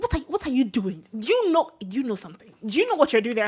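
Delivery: mock irritated, annoyed, nagging, grilling tone. Retelling how an annoyed mom scolded players during a game: imitating annoyed mom. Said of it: "she was so annoyed".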